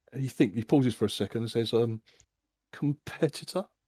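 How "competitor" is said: put-on questioning tone, higher, quieter. Retelling how a man greets you last after a pause; retelling a questioning tone. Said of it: "he says it in like a questioning tone".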